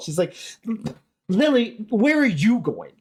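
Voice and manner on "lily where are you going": high, exasperated, raised call. Retelling an actor's alternate take: imitating an exasperated line. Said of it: "exasperated with Lily".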